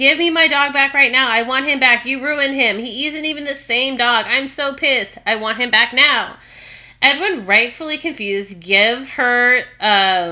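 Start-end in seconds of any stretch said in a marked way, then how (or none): 0.0-6.4 put-on freaked-out ranting, screaming woman's voice. Telling a story, the speaker acts out Karen yelling at Edwin, imitating Karen screaming. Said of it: "She begins screaming".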